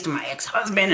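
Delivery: ordinary delivery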